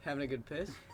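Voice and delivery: soft, hushed half-whisper, very close. Retelling someone coming up behind at the urinal: imitating Miguel half-whispering. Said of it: "kinda whispers in my ear".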